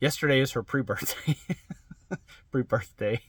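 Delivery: stifling giggles partway through. Talking about plans for the wife's birthday, trying not to laugh. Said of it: "I'm trying not to laugh when I say that".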